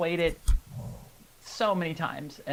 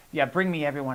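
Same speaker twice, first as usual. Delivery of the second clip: normal talking voice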